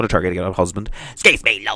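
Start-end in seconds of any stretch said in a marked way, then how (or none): 1.1-1.8 put-on woman's voice with a Belfast accent. Retelling a passenger asking about seats: imitating a Belfast woman. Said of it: "the wee Belfast woman".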